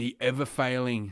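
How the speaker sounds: botched put-on voice, stumbling and tripping over words. Trying and failing to imitate a phrase: Donald Trump voice. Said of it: "I was trying to do a Trump voice".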